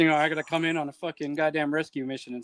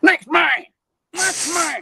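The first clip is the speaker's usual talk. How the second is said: put-on yell, much higher pitch; 14 semitones higher, 8 dB louder than usual. Telling others about the Fort Benning army chow hall, imitating chow-hall lady yelling. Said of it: "ladies yelling at you in the chow hall".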